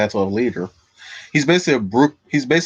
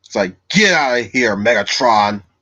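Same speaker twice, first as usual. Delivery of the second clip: slow, angry, deliberately bad robot-leader voice. Describing Optimus Primal warning Megatron, doing a bad Optimus Primal voice. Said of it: "It's my bad Optimus Optimus Primal voice".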